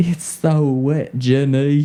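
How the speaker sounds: very slow character voice, every word drawn out. Joking about what one says during sex: Forrest Gump voice. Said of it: "That was Forrest Gump".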